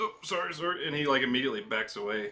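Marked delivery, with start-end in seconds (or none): 0.0-0.9 terrified, acted frightened voice, higher pitch.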